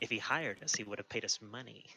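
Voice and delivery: muttered under breath. Narrating what a character says in the scene, muttered under his breath. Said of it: "under his breath says".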